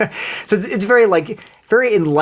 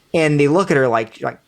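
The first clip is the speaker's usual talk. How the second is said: plain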